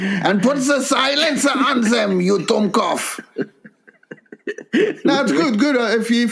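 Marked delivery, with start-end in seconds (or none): 0.0-3.2 fake German accent, pitched higher. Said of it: "Where's the German accent?".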